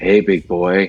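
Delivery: flirty, put-on sat-nav announcer voice. Retelling a GPS that talked during a meeting: imitating a flirty cougar GPS voice. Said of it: "TomTom tracker on that had the cougar voice".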